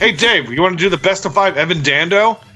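ordinary talk

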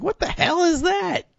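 put-on high-pitched, baffled child voice.

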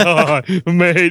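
talking through put-on laughter. Retelling how another speaker said a line: imitating someone laughing while talking. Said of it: "you're laughing as you're saying it".

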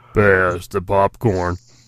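very low, bottom-of-the-range deep voice. Taking a turn in a contest over who can go deepest, deepest voice possible. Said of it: "Who can go the deepest".

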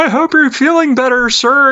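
mock piercing, shrieking, very high-pitched scream. Retelling a movie scene where a man answers a musician from the park, imitating his scream. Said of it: "And he just screams".

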